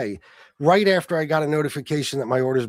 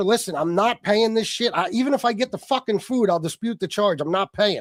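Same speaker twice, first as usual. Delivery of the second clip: mock half-yell, pitched-up and heated; 6 semitones higher than usual. Retelling yelling at a shopper over a canceled grocery order, retelling own yelling. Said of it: "So I'm yelling at her".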